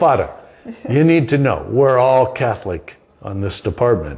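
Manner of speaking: put-on thick New York accent, laid on heavily. A chaplain quotes a man from the department at Ground Zero, in a heavy New York accent. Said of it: "with a New York heavy accent".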